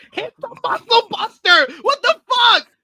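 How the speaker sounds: exasperated, frustrated, shrill yell, very high and loud. Recounting watching a wrestling match, retelling yelling at the screen. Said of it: "I was yelling at the screen".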